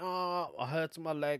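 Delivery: unconvincing, badly acted put-on show of pain. A man retells his wife's pretend leg injury, imitating Sheila's bad fake acting. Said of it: "that's the worst acting I've ever seen".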